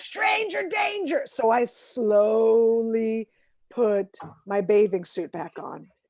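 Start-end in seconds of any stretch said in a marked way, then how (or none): 0.0-1.2 acted high little-kid yell, called out far. Speaker retells a little kid yelling at him, imitating a yelling kid. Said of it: "and he's just yelling".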